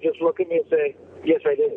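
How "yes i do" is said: put-on bone-dry, humorless deadpan delivery. Recounting how people answer the laughing question, imitating a deadpan reply. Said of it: "completely deadpan".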